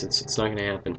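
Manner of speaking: plain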